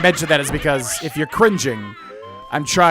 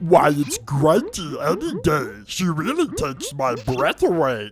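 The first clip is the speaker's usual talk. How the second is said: dopey put-on character voice. Voice acting a rhyming scene, answering as the cauldron in a dopey Dingpot voice. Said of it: "decent dopey cauldron voice".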